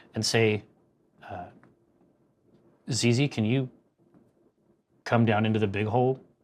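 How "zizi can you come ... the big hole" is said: very calm and even, quieter tone. A character calls back to the ship, in a very calm, even tone. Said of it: "in a very calm, like the calmest".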